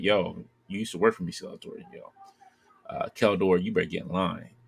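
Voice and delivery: animated, gloating, lordly voice, swooping wide. Acting out a scene where Hordak confronts Skeletor: Hordak voice. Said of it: "Hordak comes in, it's like".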